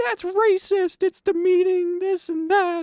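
slow, very high, drawn-out shrieking rant. Retelling a woman in the theater screaming at a man, imitating a woman screaming. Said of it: "fucking screaming at him".

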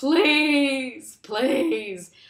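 high, tearful, sobbing pleading with each please stretched. Retelling a man wading into a river, imitating crying, pleading. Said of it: "he's crying and he's just like".

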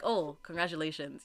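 dry, flat, level, low deadpan delivery. Showing how the congratulation actually comes out: imitating a dry, flat congrats. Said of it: "when it comes out, it's just like".

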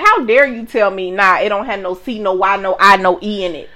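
ordinary delivery

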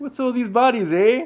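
exaggerated, shrill, very high over-the-top Canadian accent. Joking that Canadians dislike bodies, a speaker asks in an over-the-top Canadian accent. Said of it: "boot my impersonation".

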